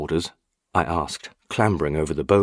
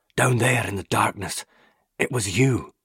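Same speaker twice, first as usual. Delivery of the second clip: gasped, hoarse, strained voice; 5 semitones higher than usual. Just awake, a man looks the narrator in the eye, a strained, hoarse gasp. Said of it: "he gasped, his voice strained and hoarse".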